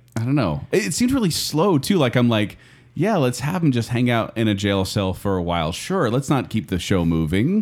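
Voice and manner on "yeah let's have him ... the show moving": ordinary talk, nothing marked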